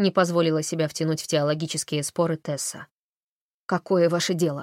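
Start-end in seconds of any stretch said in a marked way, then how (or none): 3.7-4.6 sharp, brusque tone. Narrating a woman's reply to a priest, said sharply. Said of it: "ответила женщина резко".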